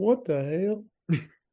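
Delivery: cartoon dad voice with a Texan accent. Act out your own reaction while shining a light on a big pile of shoes, in a Hank Hill voice. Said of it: "in a Hank Hill voice".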